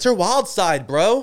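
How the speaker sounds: very slow, loud, high, dragged-out yell. Answering another speaker's question about a leopard print: yelling. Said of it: "Don't yell at me".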